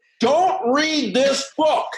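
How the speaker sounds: very slow, drawn-out, very high-pitched delivery. Retelling a conference panel bit: Charlie Jones imitation. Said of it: "a Charlie Jones imitation".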